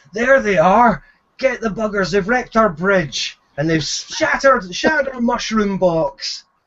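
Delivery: agitated, angry man's voice, calling out. Game narrator voicing a man shouting as footsteps approach the players: man shouting. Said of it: "you hear the voice of a man shouting".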